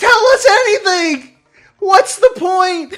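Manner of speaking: high, loud scream. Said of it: "I'm screaming at the screen".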